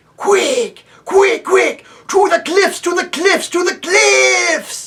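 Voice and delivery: very high, loud, scorching hissing cry. Reading the voice rising from the depths of Bism, hissing, scorching fiery voice. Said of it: "a hissing, scorching voice, like the voice of fire itself".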